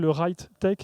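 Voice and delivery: self-mocking put-on English accent. Saying an English term while joking about their magnificent English accent. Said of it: "avec mon magnifique accent anglais".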